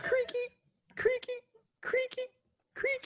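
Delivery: very high-pitched creaking talking-staircase voice. Voicing the creaky stairs that talk during a midnight walk: voicing talking stairs. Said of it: "Why are my stairs talking?".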